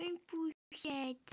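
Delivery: put-on high, babyish little baby voice. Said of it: "je fais une voix de bébé".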